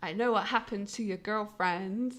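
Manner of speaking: weird, creepy, eerie put-on demon voice. Retelling a scene, the speaker voices a figure speaking to another character, weird, spooky demon voice. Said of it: "in a demon voice, which is all like weird and spooky".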